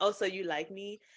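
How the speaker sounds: ordinary talk, nothing marked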